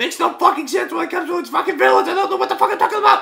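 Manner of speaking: really worked up, very high and rough. Ranting to viewers about an anime's villains, angry and agitated. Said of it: "I'm getting really fucking agitated".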